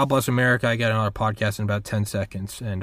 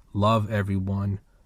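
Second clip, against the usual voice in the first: ordinary delivery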